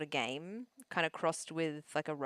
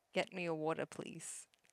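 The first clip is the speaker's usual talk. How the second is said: commanding, authoritative tone, quieter; 6 dB quieter than usual. Showing a partner how to demand a water: commanding, telling not asking. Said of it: "Don't ask me. Tell me".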